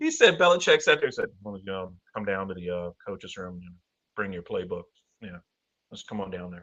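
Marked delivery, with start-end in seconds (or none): 1.4-6.6 low, very quiet monotone. Retelling what a coach said to a player: Belichick monotone voice. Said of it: "he got that monotone voice".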